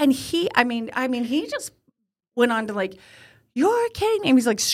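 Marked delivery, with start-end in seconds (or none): 3.5-4.3 very high, screaming rant. Retelling a man's outburst about leaving a shopping cart: imitating someone screaming. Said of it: "screaming at me about leaving the cart".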